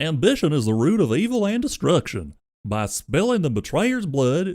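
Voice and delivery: belted, loud, dopey cartoon dog voice. Reading a dark story passage aloud, trying it in a Goofy voice. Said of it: "This is a great one for Goofy".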